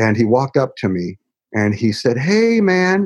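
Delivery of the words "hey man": high-pitched seventies hippie voice. Retelling how a guy first greeted him: imitating a hippie. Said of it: "just like a hippie would".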